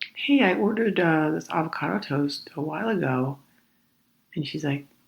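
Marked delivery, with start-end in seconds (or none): 0.1-3.4 slow, relaxed, easygoing, polite tone. Retelling asking a counter worker about an order: imitating own slow relaxed request. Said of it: "I slowly, in a relaxed manner, said".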